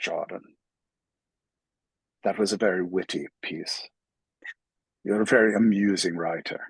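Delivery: put-on Irish accent. Speaker recalling what Mr. McCourt always said to him, Mr. McCourt's Irish brogue. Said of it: "in his, like, you know, brogue".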